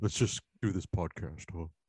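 talking horse voice. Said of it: "Now you sound like Wilbur, like Ed, uh, Mister Ed".

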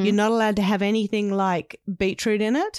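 usual speaking voice

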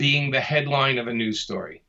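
ordinary delivery

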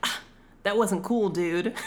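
ordinary delivery

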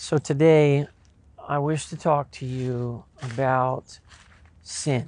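very slow, drawn-out delivery in a low voice. Demonstrating a poor way to open a difficult sermon, very slow and low. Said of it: "what I just demonstrated, being somebody who speaks very slow, very low".

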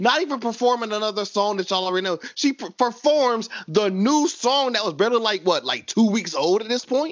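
high, worked-up, carried-away yelling. Recounting how a performer stole the whole show, yelling. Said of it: "I'm yelling".

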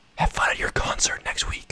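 whispering. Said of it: "we just whisper in his ear".

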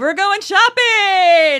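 very high, very loud, belted-out declaiming delivery. Asked to read the line like Oprah: Oprah voice. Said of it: "Say it like Oprah".

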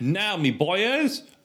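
very high voice slipping into Australian accent. Practicing accents with a friend, the line slips again: accidental Australian accent. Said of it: "It happened again".

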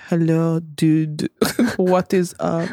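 slow, unhurried, put-on French-accented English. Acting out a casual greeting to a dude, in a French accent. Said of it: "but like with the French accent".

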